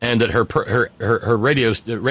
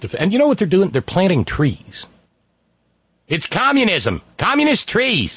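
clumsy, bad, put-on New Hampshire accent, swooping; 8 semitones higher than usual. Staying in character during a comedy bit: bad New Hampshire accent. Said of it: "my New Hampshire accent needs work".

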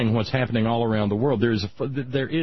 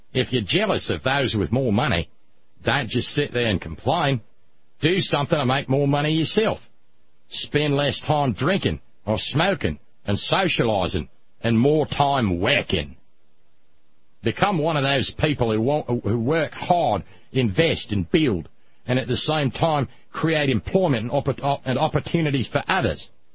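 Australian accent, put on for show; 2 semitones higher than usual. Told to go ahead, the speaker delivers someone else's quoted statement in an Australian accent. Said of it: "Do you mind if I do the Australian accent?".

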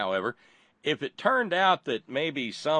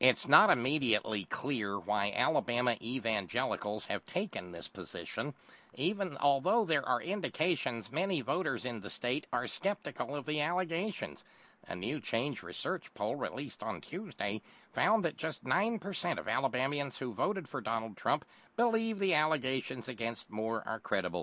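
put-on nerdy voice, bookish reading delivery; 7 dB quieter than usual. Reading a news report aloud to the audience, in a nerd voice. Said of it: "I'm going to have to use my nerd voice for this".

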